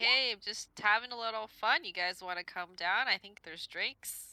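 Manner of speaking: very loud high calling out. Spotted by patrols on the rampart, a player's character answers them, shouting back. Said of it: "I shout back".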